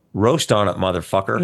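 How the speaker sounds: usual speaking voice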